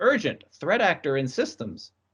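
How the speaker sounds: ordinary delivery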